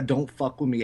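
ordinary delivery

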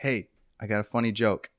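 normal talking voice

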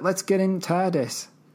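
put-on Northern English accent. Quoting what they said about the TARDIS, in a Northern accent. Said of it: "Why do you do the Northern accent better than me?".

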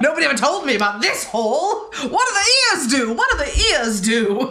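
loud, high, put-on old-timey New York accent. Retelling a scene and voicing the man's reaction, in an old-timey New Yorker accent. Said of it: "Why do I make him sound like an old-timey New Yorker?".

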